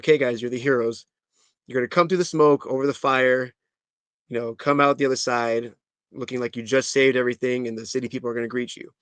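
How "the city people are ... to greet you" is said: ordinary talk, nothing marked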